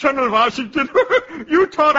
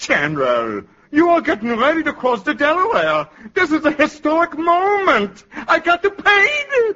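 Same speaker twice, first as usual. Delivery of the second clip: put-on very thick, laid-on-heavy German accent. Painter addressing General Washington before crossing the Delaware, thick German accent. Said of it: "It's a pretty thick accent you got".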